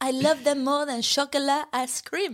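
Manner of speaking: made-up, put-on French accent. Speaker quoting Brigitte praising two girls, imitating Brigitte, French accent. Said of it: "I don't know where that accent's coming from".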